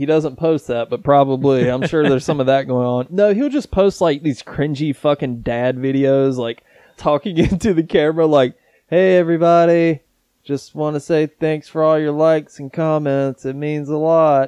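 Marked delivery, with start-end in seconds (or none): 8.9-14.5 empty, lifeless, vacant, flat monotone drone. Imitating a guy talking into the camera in his videos, monotone voice. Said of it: "monotone voice".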